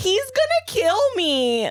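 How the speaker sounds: very high, slow, stretched-out, swooping voice. Imitating a reality star in her confessional: imitating Carolyn from The Traitors. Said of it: "that's what she sounds like".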